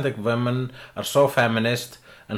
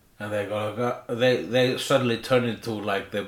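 usual speaking voice

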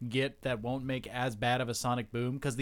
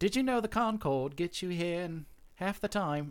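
bad put-on British accent, pitched high; 5 semitones higher than usual. Acting out one of the twins talking about the Concorde, in a bad British accent like Lindsay Lohan. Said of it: "That bad British accent you hit".

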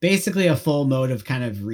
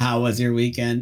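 put-on robotic voice. Imitating an ai manager asking about the weekend: imitating an ai manager voice. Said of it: "It has to talk like that, too".

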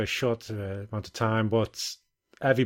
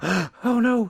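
put-on panicked woman voice, much higher; 12 semitones higher, 4 dB louder than usual. Retelling his story about a woman at the film; imitating a panicked woman. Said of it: "she was panicked about it".

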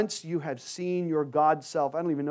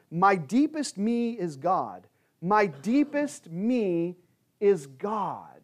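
mock, very slow, drawn-out, ringing cry; 4 semitones higher than usual. Retelling how a saint ran out of church: imitating someone screaming. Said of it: "screaming from the top of her lungs".

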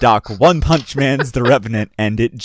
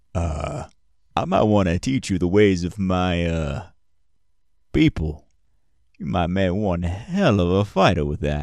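low, quiet stoic cowboy voice, "my" stretched; 4 semitones lower, 5 dB quieter than usual. Game master voicing Nova, who speaks to the player character: stoic cowboy voice. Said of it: "Stoic cowboy type he is".

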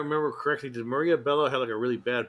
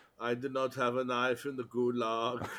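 quieter put-on German filmmaker voice; 4 dB quieter than usual. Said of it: "Why do I sound like, uh, Werner Herzog?".

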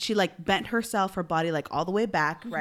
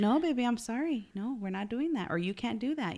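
very calm, even, hushed voice; 4 semitones higher, 6 dB quieter than usual. A parent acts out telling her baby no, retelling a super-calm no. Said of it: "I can say it super calm".

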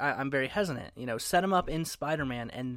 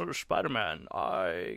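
put-on Scottish accent, pitched lower; 5 semitones lower than usual. Copying another speaker's Bane line, ending up as Sean Connery voice. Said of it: "You're doing Connery".

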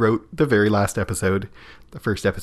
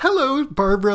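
very high, bright, cheerful voice. Retelling a character's first greeting on the show: imitating Barbara, so cheerful. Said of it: "so cheerful and, like, wide-eyed".

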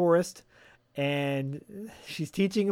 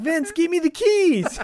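put-on shrill, high, loud yell; 6 dB louder than usual. Retelling a movie scene where a cop demands keys: imitating someone yelling. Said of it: "He yells at Vince to give the".

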